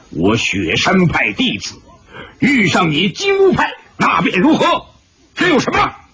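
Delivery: stern, severe, harsh, rising voice. Bai Wanjian answers a man of the Jinwu sect; stern, harsh voice. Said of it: "厉声说道".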